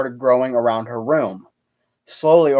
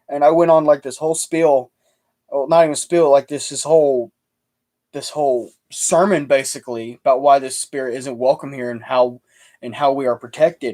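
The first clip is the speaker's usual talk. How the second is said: usual speaking voice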